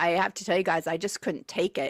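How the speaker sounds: usual speaking voice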